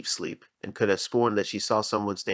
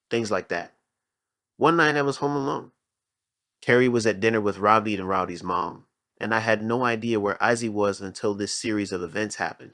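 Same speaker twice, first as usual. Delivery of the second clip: normal talking voice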